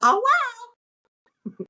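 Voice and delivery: very high-pitched, silly little voice.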